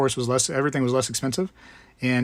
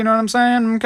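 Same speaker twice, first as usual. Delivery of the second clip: bad, fake Cajun accent, pitched way up; 10 semitones higher, 6 dB louder than usual. Giving a going-away present, trying a little Cajun talk: bad Cajun accent, Herbert the Pervert. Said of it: "I don't know how to actually talk Cajun".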